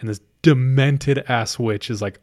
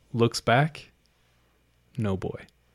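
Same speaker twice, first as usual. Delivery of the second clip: ordinary talk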